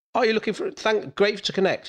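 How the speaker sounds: pushy, salesman-style voice. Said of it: "it's like".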